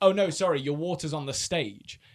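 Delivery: mock-smug, put-on smug tone. Retelling how a woman refused them water before their show, imitating her smug reply. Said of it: "she was being really smug".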